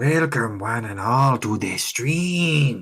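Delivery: booming, very loud, haunted, spooky ghost voice. Streamer welcoming viewers to a Halloween stream, in a spooky ghost voice. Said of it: "Doing like the ghost voice".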